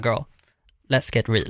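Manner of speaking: ordinary talk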